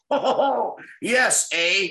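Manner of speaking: bad Canadian accent with eh tacked on the end. Retelling how Ed McMahon tried the accent, doing Ed McMahon's bad Canadian accent. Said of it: "he would just say A at the end of everything".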